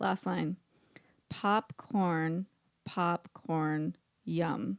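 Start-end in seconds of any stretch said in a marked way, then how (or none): 1.3-4.8 slow, stilted, each syllable set apart. Reading the last line of a haiku aloud, slow, syllable by syllable. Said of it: "I'm going to do it slow".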